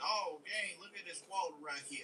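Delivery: mushy Southern drawl with smoothed consonants. Showing how speech gets more southern: mushy southern drawl. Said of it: "you get mush mouth".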